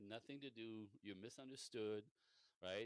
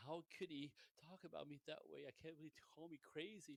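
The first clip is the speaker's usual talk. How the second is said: high, crushed, wounded, devastated disbelief; 6 semitones higher than usual. Retelling a woman's reaction after overhearing a phone call, mock-devastated. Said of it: "just devastated".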